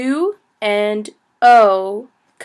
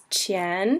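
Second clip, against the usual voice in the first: qian said with rising second tone; 2 semitones lower, 8 dB quieter than usual. Mandarin lesson on the word qian: rising second tone on qian. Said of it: "The qian is second tone, so it's qian, which sort of sounds like a question".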